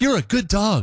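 high-pitched, praising voice. Demonstrating a phrase people said to dogs in tests, high-pitched voice to a dog. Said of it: "I can't get high enough".

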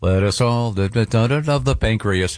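usual speaking voice

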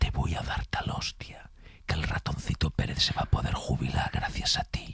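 soft, low, menacing whisper. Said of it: "que da mucho más miedo cuando te lo dices susurrado".

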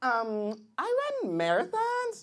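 put-on girl voice.

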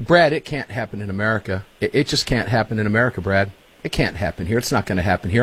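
plain

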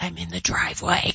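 hushed whisper, under the breath. Retelling a phone call with his girlfriend, who is in the driveway, retelling a whisper. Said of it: "And she's like whispering".

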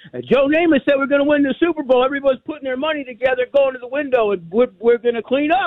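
excited father voice.

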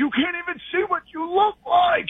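high, mock, angry yelling voice.

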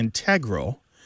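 integral with stress on second syllable, -TE-. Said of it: "are becoming stressed on the second syllable".

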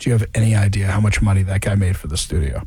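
mock very low, flat, straight-faced deadpan. Retelling a studio tour, the speaker imitates the tour guide's deadpan reply. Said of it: "straight deadpan".

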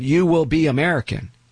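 heavy, laid-on, put-on Mexican Spanish accent. Retelling what immigrant parents told their kids: imitating a thick accent. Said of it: "with a thick accent".

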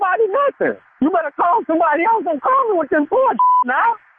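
voice climbing way up high. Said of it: "why your voice getting high?".

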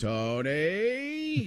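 excited announcer voice, high, swooping, drawn-out name. Showing a limited impression of an announcer saying one name: Jim Nantz impression. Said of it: "My Nance is limited to just saying".

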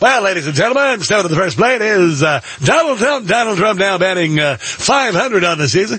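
put-on old-time baseball announcer calling voice. Imitating a pollster who talks like an announcer: Harry Enten as old-time baseball announcer. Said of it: "talks like an old-time baseball announcer".

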